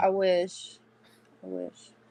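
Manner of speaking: slow, nostalgic, wistful, longing tone. Answering a teasing remark that she's only twenty-five: wistful tone. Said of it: "The wistful tone in her voice".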